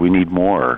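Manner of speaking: ordinary talk, nothing marked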